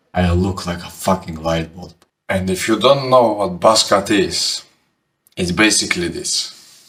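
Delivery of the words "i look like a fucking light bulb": sour, bitter, deep voice. The speaker retells standing up and speaking to a friend: retelling a bitter, deep voice. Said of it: "with bitter, deep voice say to my friend".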